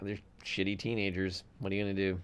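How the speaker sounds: a low, soft, dismissive tone. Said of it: "I just go".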